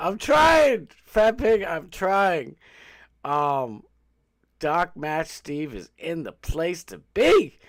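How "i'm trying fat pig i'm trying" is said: too loud, getting louder. Speaker admits to a friend they're too loud and trying; too loud. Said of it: "I know I'm too loud".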